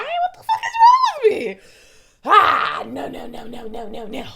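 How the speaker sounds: choking up on the verge of tears, high and swooping. Talking to Gracie, suddenly overwhelmed, about to cry. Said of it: "I'm about to cry".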